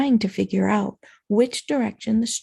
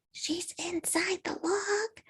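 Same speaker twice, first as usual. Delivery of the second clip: very quiet, soft, slow, careful hushed voice; 8 semitones higher, 11 dB quieter than usual. Emily, just signalled to be quiet, asks about a moan from the log, hushed voice. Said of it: "Emily asked in a hushed voice".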